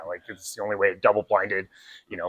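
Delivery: quick, quiet mumbling.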